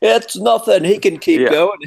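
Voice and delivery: mock very high, shrill, high-pitched screaming. Act out the trainer telling his fighter to keep going despite a cut, imitating a screaming trainer. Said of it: "his trainer was screaming at him".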